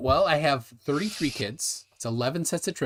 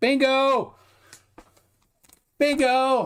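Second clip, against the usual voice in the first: very high-pitched, loud, excited shouting; 12 semitones higher, 4 dB louder than usual. Speaker calls out after getting a diagonal line, yelling. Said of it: "I shouldn't not yell bingo".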